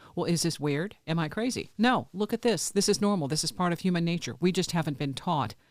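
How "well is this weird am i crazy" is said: ordinary delivery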